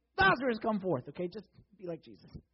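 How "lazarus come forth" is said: big, booming, loud, commanding shout. Imagining raising a dead person, calling lazarus to come forth: loud voice. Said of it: "I'm going loud voice".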